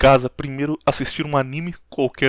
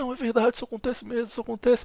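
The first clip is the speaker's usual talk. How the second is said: mock weeping, high, tearful old lady voice; 9 semitones higher, 6 dB quieter than usual. Retelling a TV scene where an old woman answers: imitating an old woman crying. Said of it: "a véia começa a chorar e fala".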